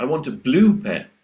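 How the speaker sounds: emphasis lands on the word blue. Showing how stressing the right word shapes meaning: stress on blue. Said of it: "if you stress the right word, as in blue".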